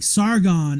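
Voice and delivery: loud carrying call. Retelling a clip where people call someone repeatedly: imitating people calling loudly. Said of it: "speaking loudly towards Sargon".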